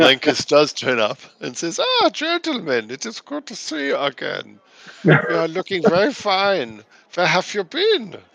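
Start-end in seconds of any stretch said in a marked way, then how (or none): 1.8-8.1 put-on high-pitched, swooping, lilting Austrian accent. In a role-playing game, the barman Lankus turns up and greets the group: Lankus's Austrian accent. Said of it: "I wonder if he has the same accent".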